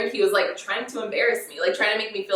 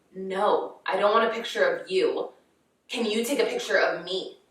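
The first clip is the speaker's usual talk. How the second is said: put-on irritated, put-out, slow, annoyed delivery; 2 semitones lower than usual. Retelling how a man at the beach answered her: imitating an annoyed man. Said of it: "he literally says it like he's, like, annoyed".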